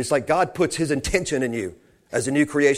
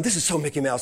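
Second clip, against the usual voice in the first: frustrated tone, quieter; 5 dB quieter than usual. Retelling the speaker's own earlier words: imitating own frustrated words. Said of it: "'cause I was frustrated".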